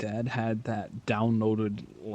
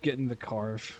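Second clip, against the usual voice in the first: ordinary delivery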